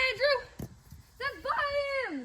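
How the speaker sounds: high, cracking, breaking voice. Cheering to Andrew during a match, voice cracking. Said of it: "I just voice cracked".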